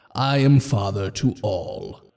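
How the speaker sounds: very low, deep, booming, thundering voice. Playing a voice heard inside a character's head, speak in a deep booming voice. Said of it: "this voice that's just deep and booming".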